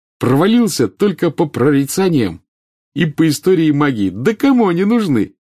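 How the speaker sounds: upbeat, carefree, cheerful, bright, high delivery. Ron speaking to Harry, cheerfully. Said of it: "весело сказал он".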